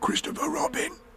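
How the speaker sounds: loud stage whisper, hushed and whispered throughout. Narrator reads a character calling down to Christopher Robin: loud whisper. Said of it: "He said in a loud whisper".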